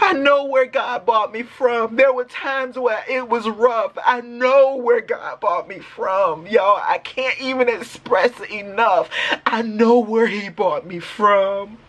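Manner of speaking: drawn-out, tearful, joyful crying. Giving thanks to god, crying tears of joy. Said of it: "I'm crying, but these are tears of joy".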